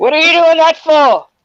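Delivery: loud, high-pitched, stern, scolding mum voice. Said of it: "Use your mum voice".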